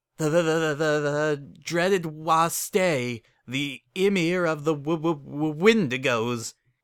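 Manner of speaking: stuttering through chattering teeth. Narrator reads the shivering stallion's words as a visitor enters, stammering through chattering teeth. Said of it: "he managed to stammer out through chattering teeth".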